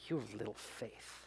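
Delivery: hushed, contemptuous, disgusted whisper. Showing how the line is often read, imitating a disgusted Jesus. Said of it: "like Jesus said it in disgust".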